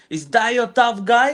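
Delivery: mock, very high, screamed jeering voice. Retelling a player screaming toward the other bench: imitating Drew screaming. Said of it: "Drew screaming to the".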